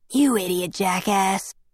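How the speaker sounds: whispering. Someone behind the narrator in class whispers an insult, whispered. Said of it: "Someone whispered".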